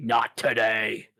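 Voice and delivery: grand, theatrical, proclaiming voice. A player character uses prestidigitation to address others: booming voice. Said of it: "give myself a little bit of a booming voice and say".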